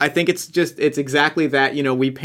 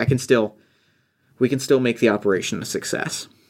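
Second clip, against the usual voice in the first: mimicked muttering, lower pitch; 3 semitones lower than usual. Recounting a scene, the speaker acts out a woman retelling her talking to herself. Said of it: "she starts talking to herself".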